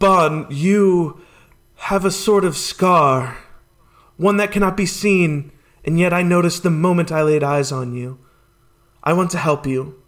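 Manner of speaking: very dramatic, breathy, theatrical voice. Game master voices a character speaking to a player's character: very dramatic and breathy. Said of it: "very dramatic and breathy".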